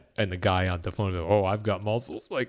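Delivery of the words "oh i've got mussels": play-acted proud, self-pleased, cocky show-off bragging. Retelling what the pizza guy said on the phone: imitating a guy boasting of muscles. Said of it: "like he was muscular".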